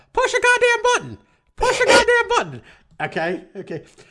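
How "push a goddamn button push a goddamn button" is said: put-on little-girl voice, much higher pitch. Quoting one-liners from Rush Hour, talking like the little girl. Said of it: "I'm talking just like the little girl".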